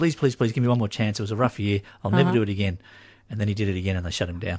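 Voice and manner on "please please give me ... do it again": put-on pleading voice. Retelling what a boss who skipped his taxes told the government: imitating someone pleading. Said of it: "and he pleaded to him".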